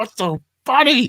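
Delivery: put-on, very high, fed-up, irritated voice. Retelling how a sibling reacted in the car: imitating a pissed-off sibling. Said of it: "he's just getting pissed off".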